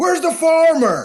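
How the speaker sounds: mock, loud, high, booming shout. Retelling how someone called out on coming upstairs: imitating a loud call. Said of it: "Like, real loud".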